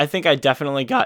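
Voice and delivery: voice cracking and breaking mid-sentence. A speaker describing working on their animation, mid-sentence: voice cracking. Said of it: "voice crack, oopsie, I'm fifteen again".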